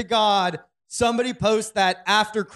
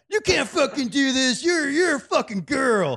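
obnoxious, pitched-up jerk guy voice; 5 semitones higher than usual. Acting out an imagined movie scene: imitating a jerk guy. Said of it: "some, like, fucking jerk guy who's like".

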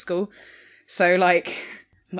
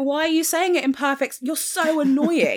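high, put-on annoyed, fed-up, exasperated tone; 9 semitones higher than usual. Retelling an earlier reply to an annoying student: retelling own exasperated reply. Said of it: "And I'm just like".

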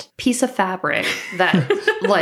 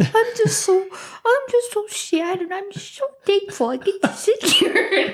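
put-on old man voice, much higher, slower; 10 semitones higher than usual. Mocking the Muppet film's Tiny Tim, Tiny Tim old-man voice. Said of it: "he's talking like an 86-year-old man".

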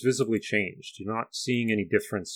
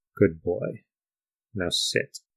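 private, confidential tone for one listener only; 3 semitones lower than usual. Speaker retells what she said, very quiet, barely heard. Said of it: "Very quietly. So quiet that you only barely hear her".

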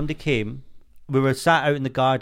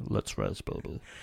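breathy near-whisper, line breathed out; 12 dB quieter than usual. Announcing and doing a Vin Diesel impression. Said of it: "Vin Diesel".

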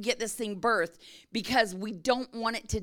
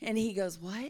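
normal talking voice

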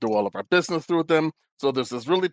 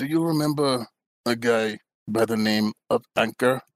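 voice lowered slightly, a little lower than before. Asking someone whether they remember a guy named Anchor, voice lowered a little. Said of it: "I kind of lower my voice a little bit".

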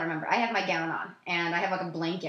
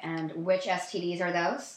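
ordinary delivery

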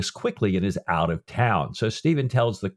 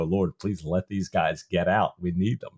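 put-on reverent, prayerful tone, lower pitch; 4 semitones lower, 3 dB quieter than usual. Retelling a book scene where Reed prays for ships: imitating Reed praying reverently. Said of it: "I love this reverential moment for Reed".

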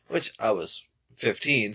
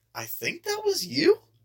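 very high pitch, slow, dragged out, sounding unsure. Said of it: "people leave voicemails like".

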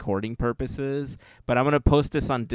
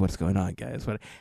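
lower, put-on sleepy, groggy voice; 3 semitones lower than usual. Imitating Larry woken from sleep by a phone call: imitating sleepy Larry. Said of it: "he's asleep right now. He's like".

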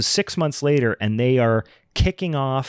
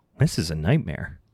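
mock mildly inconvenienced tone, much lower pitch; 6 semitones lower, 4 dB quieter than usual. Retelling the mayor's reaction to a student on fire, mimicking mild inconvenience. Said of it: "He says it very much like that. He says it like he got to Avis rent a car and they didn't have any cars left".

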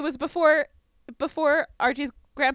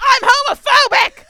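put-on scream, much higher, louder; 12 semitones higher, 13 dB louder than usual. Recapping a scene where Penelope bursts into the room, screaming as Penelope. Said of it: "She screams".

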